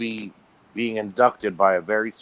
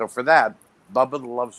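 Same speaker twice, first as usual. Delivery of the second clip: ordinary talk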